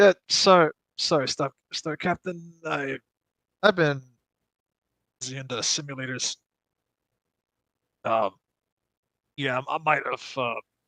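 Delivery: tired, weary, worn-out voice. Told to act it out, playing the character answering the Star Captain, tired, weary voice. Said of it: "like a tired, like a sense of tiredness".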